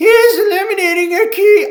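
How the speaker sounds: put-on acted elderly woman voice. Quoting a senator's statement aloud: Granny Warren accent. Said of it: "I'm trying to do my Granny Warren accent".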